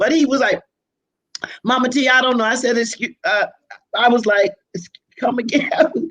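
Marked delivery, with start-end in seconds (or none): none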